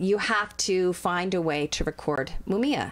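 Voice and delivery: ordinary talk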